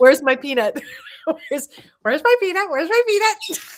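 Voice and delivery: repeated talking-bird voice, high and loud. Showing how a pet conure talks: imitating Bonzo the conure. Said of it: "he talks like".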